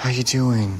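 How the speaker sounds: sympathetic, pitying voice. A woman whose boyfriend is in a coma mimics how others talk to her, mock pity voice. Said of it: "You never do the pity voice with me".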